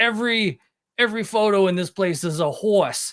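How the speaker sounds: heavy, put-on Brooklyn accent, slow and high. Retelling what a man in Louisville kept saying: imitating a strong Brooklyn accent. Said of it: "with the strong ... Brooklyn accent".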